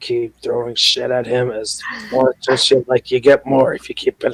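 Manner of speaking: hushed half-whisper, under the breath. Playing a character who tips a smith a coin: half-whispering. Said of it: "just whispers to him".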